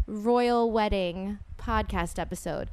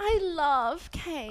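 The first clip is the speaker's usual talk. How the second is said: high, fake, sexy put-on American accent; 6 semitones higher than usual. Repeating on request what a woman said, in a put-on accent. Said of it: "Do that again".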